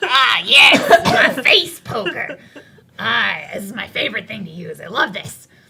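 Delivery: loud little goblin voice. Narrating a scene, voicing the small goblin reminiscing in her workshop: Cloggle's small goblin voice. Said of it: "let me get her voice".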